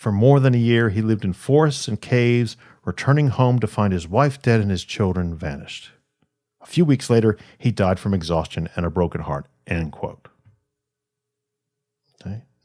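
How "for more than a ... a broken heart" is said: normal talking voice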